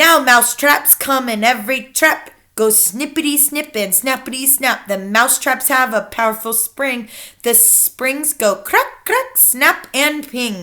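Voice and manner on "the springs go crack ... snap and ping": ordinary delivery, nothing marked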